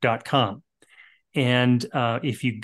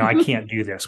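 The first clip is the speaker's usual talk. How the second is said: normal talking voice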